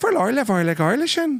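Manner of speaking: bad put-on Irish accent. Showing an impression drifting into another accent: irish accent slipping in. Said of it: "eventually I just become an Irish guy".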